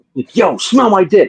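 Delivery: slow, mock irritated, fed-up girl voice. Retelling what a girl used to say when pissed off: imitating an angry girl. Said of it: "if she was pissed off, she would go".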